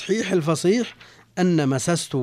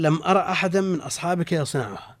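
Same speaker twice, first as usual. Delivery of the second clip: ordinary talk, nothing marked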